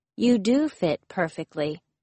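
plain reading voice

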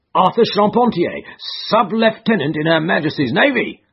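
pompous, boastful, self-important cry. A narrator reads a man answering a question about the arrest, crying out pompously. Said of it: "cried Gregson pompously".

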